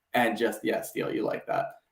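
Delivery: normal talking voice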